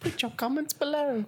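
slipped-into British accent, pitched very high. Asking viewers to comment below, slipping into a British accent. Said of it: "I went British there".

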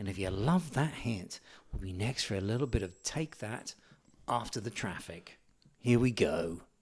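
very soft, hushed, smooth radio-DJ voice. Speaker imitates a Smooth FM presenter with a radio voice: imitating a radio presenter's voice. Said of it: "this guy that has just got uh, this radio voice".

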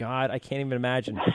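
ordinary talk

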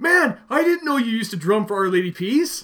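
eager, excited high voice. Speaker retells what a man said at a merchandise signing, imitating him excited. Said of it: "he's all excited".

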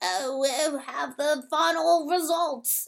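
put-on slow, high Australian accent. Speaker retelling someone announcing the final results, in an australian accent. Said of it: "that's a really good Australian accent".

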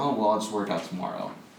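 ordinary talk

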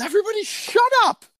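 mock high-pitched shouting. Retelling the moment it started playing with everyone around; retelling a yell. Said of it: "I yelled".

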